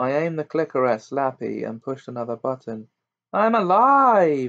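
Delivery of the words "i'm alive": tiny, raspy, high-pitched, drawn-out scream. After the narrator presses the clicker, the dummy Slappy answers with Slappy's tiny raspy scream. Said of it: "the dummy screamed in its tiny rasp of a voice".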